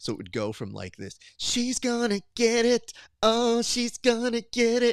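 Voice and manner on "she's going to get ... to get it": very high, slow, floating sung vocal. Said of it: "go from a pristine album vocal to, like".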